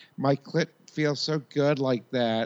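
high Minnesota housewife accent. Podcast hosts riffing on regional accents, one doing a: Minnesota housewife accent. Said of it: "That's the worst accent for me in that area, is Minnesota, like, housewife".

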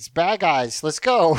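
ordinary talk, nothing marked

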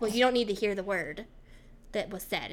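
normal talking voice

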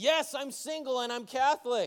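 eager, thrilled, very excited, high-pitched voice. Telling a joke, the narrator voices the driver answering a nun, very excited. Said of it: "the driver replies very excitedly".

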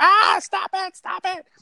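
very high, panicked shriek. Retelling a woman heard screaming from far away, imitating panicked screaming. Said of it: "sort of panicked screaming".

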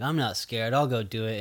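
mock tough bravado in a kid voice. Retelling a movie scene, quoting a kid: imitating a kid acting tough. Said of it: "trying to be all tough and he's like".

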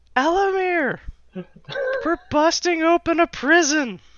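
very high-pitched, shrill yell. A small felt character scampers up to a shoulder and calls to a companion, yelling. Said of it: "But just like yells".

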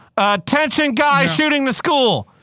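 very high, loud bullhorn-style announcement. Mocking a responder who talks to a shooter: mock bullhorn announcement. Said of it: "gets over a bullhorn".

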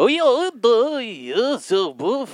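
Russian-accented voice. In an accent game, one player is called on to do Russian; Russian accent.

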